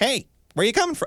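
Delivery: very high, piping, high-pitched man's voice. Retelling a chat with a short man asking where they came from, imitating a high-pitched voice. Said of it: "he's got this really high pitched voice".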